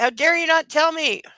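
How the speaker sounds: high-pitched shouted outburst, acted out. Retelling a man yelling at a woman's voicemail: imitating someone yelling. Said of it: "he's yelling at her voicemail".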